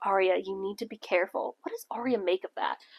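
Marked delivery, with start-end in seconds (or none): 0.0-1.6 dark, foreboding, ominous tone. Recapping a scene, the speaker acts out Ezra's line to Arya; mock-ominous Ezra line. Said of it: "he very like ominously is like".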